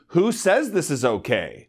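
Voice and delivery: ordinary talk, nothing marked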